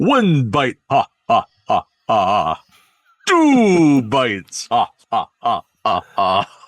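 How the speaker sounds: swooping vampire voice. Imagining Sesame Street's Count playing Dracula and biting Big Bird, the Count voice counting bites. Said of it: "you need the Count to play Dracula".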